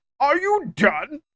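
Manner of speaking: very high-pitched put-on voice. Guessing aloud how a character sounds: Cell voice. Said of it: "Or he's like Cell".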